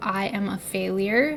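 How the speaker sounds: ordinary talk, nothing marked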